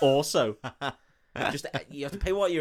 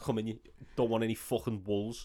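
put-on Scouse Liverpool accent, low and soft; 4 semitones lower, 7 dB quieter than usual. Acting out a local for an audience of Scottish guys: imitating a Scouse accent. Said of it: "That's what Scouse sounds like".

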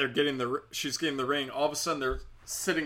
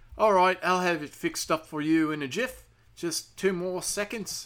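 put-on Australian-accented voice; 3 semitones higher than usual. Retelling a call with a fraud department agent: put-on Australian accent. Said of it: "Is that Australian I'm doing?".

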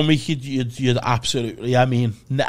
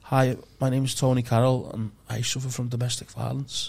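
soft, meek, timid voice; 7 dB quieter than usual. Retelling a stand-up character bit as a timid office guy: imitating a timid office guy. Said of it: "be very timid, come on stage and be like".

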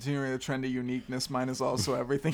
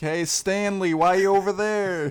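booming, high, loud, far-carrying yell; 6 semitones higher, 8 dB louder than usual. Recalling people at a theater calling out, retelling someone yelling. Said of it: "they were yelling like".

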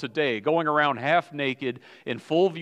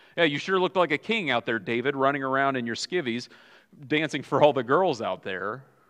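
plain

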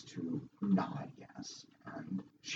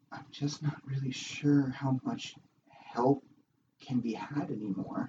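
sorrowful, downcast, a little high; 5 semitones higher than usual. Narrating a scene, voicing a woman speaking after shaking your hand, sad. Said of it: "she looks a little sadly down to him".

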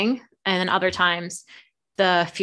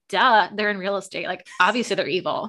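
ordinary talk

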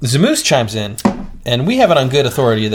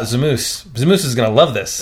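normal talking voice

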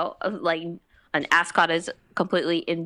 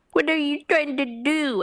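put-on high, babyish baby-talk voice; 9 semitones higher than usual. Mocking how an actor voices Shaggy: Will Forte's baby-voiced Shaggy. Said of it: "he devolves into this kind of baby voice".

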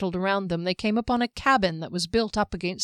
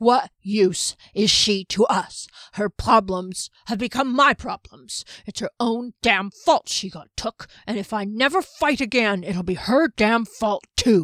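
stiff-jawed, effortful, louder speech forced through jaw; 3 dB louder than usual. Janik, pushing through a freeze spell's stiffness to form words, stiff-jawed, effortful speech. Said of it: "where [name] was just coming out of the spell that had frozen him in place. He flexed his hands and feet, and though he could move his jaw, it was stiff and the lips and tongue were not quite ready".

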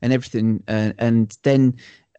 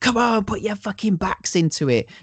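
high, raised, mock shouting; 9 semitones higher than usual. Retelling a film scene, ordering peasants from a bridge: imitating Seth shouting. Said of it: "and he's shouting".

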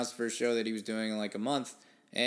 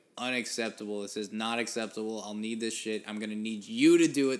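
ordinary talk, nothing marked

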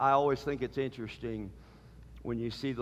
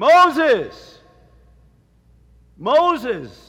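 very loud, very high, swooping, drawn-out call; 13 semitones higher, 18 dB louder than usual. Speaker retelling the Lord calling Moses from the bush, retelling a loud call. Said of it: "He said it in a quite loud voice".

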